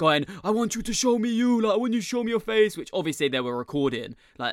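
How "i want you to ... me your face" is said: put-on crying, frantic erratic scream, very high. Retelling a woman confronting them about being on the roof: imitating someone screaming and crying. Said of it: "crying, screaming, like being basically like so erratic".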